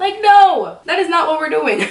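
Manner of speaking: high, loud, indignant outburst.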